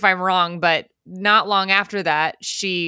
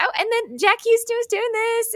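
mocking know-it-all voice, higher pitch. Describing a character on a walking tour: imitating a know-it-all tourist. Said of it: "That was a good impression".

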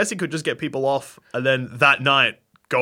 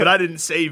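normal talking voice

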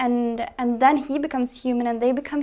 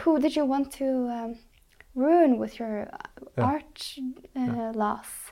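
put-on very soft, gentle, enduring voice; 3 dB quieter than usual. Retelling how an actor delivered a line in the play: very soft, enduring voice. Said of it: "in a very soft, enduring voice".

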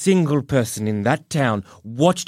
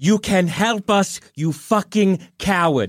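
high, pitched-up calling out, drifting farther away; 5 semitones higher than usual. In a game, a player's character calls out while floating away; calling out. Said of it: "I want to start calling out".

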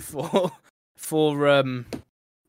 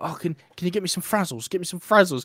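put-on kid voice; 3 dB quieter than usual. Imagining a kid asking a parent at the shop: imitating a kid asking. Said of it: "your kid's like".

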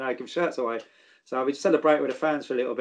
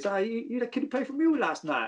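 put-on high little kid's voice; 8 semitones higher, 4 dB quieter than usual. Recalling young kids coming up to him, imitating a kid's accent. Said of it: "good little really accent".

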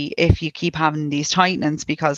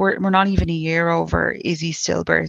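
ordinary delivery

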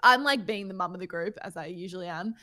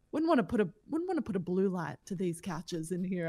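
ordinary talk, nothing marked

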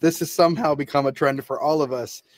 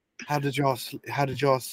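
soft, lightly put-on, fake British accent; 3 semitones lower, 7 dB quieter than usual. Imitating a man's morning greeting to the group: put-on British accent. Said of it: "I can't do British and say y'all".

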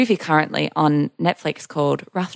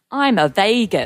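bad, botched, unplaceable attempt at Australian accent; 2 semitones higher than usual. Giving a preview of what she says, imitating her unidentified accent. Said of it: "to give you a slight preview of what she says".

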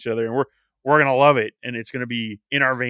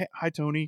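put-on, suddenly sweet, cheery, friendly tone; 4 semitones higher, 8 dB quieter than usual. Retelling a wrestling skit where the other man opens the door: imitating MJF being suddenly nice. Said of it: "He's all nice suddenly".

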